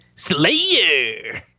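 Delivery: terrible put-on game announcer call, "Slayer" drawn out. Making a noise for a friend to judge: terrible Halo announcer impression. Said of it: "That's a terrible Halo announcer".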